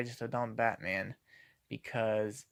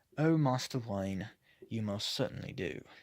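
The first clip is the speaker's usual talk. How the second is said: clumsy, poor put-on British accent. Critiquing Batman dialogue, quoting the reply line: poor British accent. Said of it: "excuse the poor British accent".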